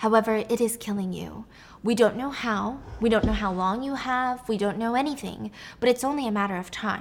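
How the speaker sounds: ordinary talk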